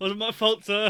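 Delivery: very loud, high-pitched, laughing through the words. Voicing a character who starts laughing while apologizing: laughing while talking. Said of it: "He begins to laugh".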